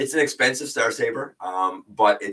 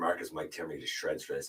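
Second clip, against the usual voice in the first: usual speaking voice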